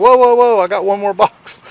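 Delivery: high, loud calling out. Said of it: "he was like".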